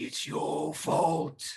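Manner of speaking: loud, angry, wrathful ghost voice. Voicing a spirit of anger that attacks a player: spirit of anger voice. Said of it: "You just hear it say".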